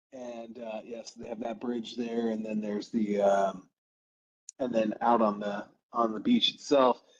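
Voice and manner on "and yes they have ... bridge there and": usual speaking voice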